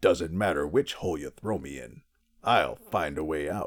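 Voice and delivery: put-on low, deep cartoon villain voice. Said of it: "That was a very good impression of him".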